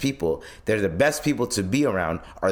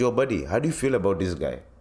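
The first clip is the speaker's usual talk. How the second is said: put-on Indian accent. Quoting what his Indian chef asked him, in a put-on Indian accent. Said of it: "There's a reason why I'm doing the accent".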